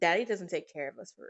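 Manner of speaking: plain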